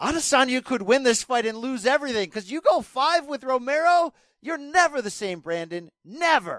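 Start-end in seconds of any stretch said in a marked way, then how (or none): 2.3-6.6 shouting, higher pitch. Arguing a fight prediction with another speaker, yelling. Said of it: "Stop yelling at me".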